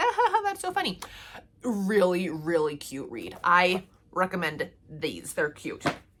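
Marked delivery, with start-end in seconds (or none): 0.0-1.0 very high, giggling, laughing out loud through words. Retelling reacting to a funny book while driving: retelling own laughing out loud. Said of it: "I laugh out loud as I'm driving".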